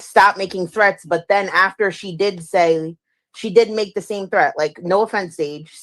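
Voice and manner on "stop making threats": ordinary talk, nothing marked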